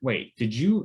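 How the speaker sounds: normal talking voice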